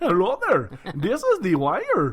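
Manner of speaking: loud, high, terrible fake Indian accent.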